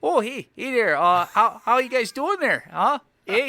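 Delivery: put-on comic Canadian accent, loud and high. Showing the canadian accent they say they've done: put-on canadian accent. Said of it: "I think I've done the Canadian accent. It's like".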